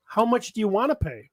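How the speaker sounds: ordinary delivery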